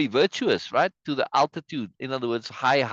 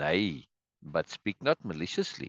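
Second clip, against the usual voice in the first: serious, sober, calming voice, very low and quiet; 10 semitones lower, 8 dB quieter than usual. As the voice of reason trying to calm things down, speak in a sober voice. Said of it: "sober voice here".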